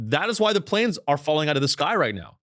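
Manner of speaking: ordinary delivery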